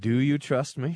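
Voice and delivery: playful put-on passive-aggressive tone. On a radio show, rewording a letter's request, mock passive-aggressive. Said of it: "in a passive-aggressive kind of way".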